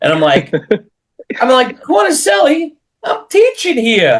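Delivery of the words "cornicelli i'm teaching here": put-on New York accent. Retelling his comeback in a class: put-on New York accent. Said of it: "in my best uh, New York accent".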